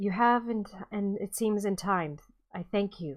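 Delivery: softly spoken, low-key, soft voice. Narrator voicing a simply dressed man stepping out behind the party: soft voice. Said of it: "you hear a soft voice coming behind you".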